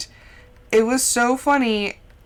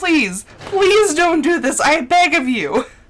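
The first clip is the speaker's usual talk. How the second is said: play-acted begging plea, high and drawn out; 5 semitones higher than usual. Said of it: "Be like".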